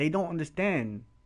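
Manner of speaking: ordinary talk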